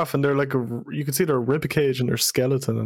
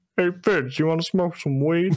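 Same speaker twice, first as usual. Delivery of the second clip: put-on country accent; 4 semitones higher than usual. Retelling another person's impersonation: country-accent SwaggerSouls impression. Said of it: "Why does he sound country?".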